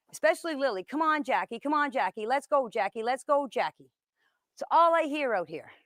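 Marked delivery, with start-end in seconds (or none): 0.9-3.9 mild, repeated calling out in put-on child voice. Retelling how the kids always call to each other: imitating a child yelling. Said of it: "Jack and Lily are all the time yelling".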